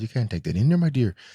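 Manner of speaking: woman's put-on voice. Repeating a woman's warning about taking his things in: Mrs. Doubtfire voice. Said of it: "She sounded like Juba Jahia Doubtfire".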